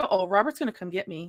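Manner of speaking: usual speaking voice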